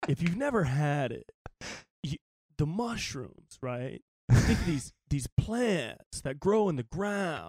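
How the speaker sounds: put-on mellow podcaster voice. Describing mushroom coffee when the other speaker asks: Joe Rogan impression. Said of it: "can you say it as if Joe Rogan was saying it?".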